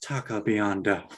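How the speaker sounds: hushed, soft, low, seductive sultry murmur. Act out the commercial idea where Chris is on a table, speaking in a soft voice. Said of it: "says in a soft voice".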